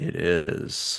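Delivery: deep, breathy, dropped-low hushed near-whisper. Imitating a friend's reaction to a movie scene: imitating Melissa's octave-lower voice. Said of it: "Melissa's voice dropped an octave. She's like".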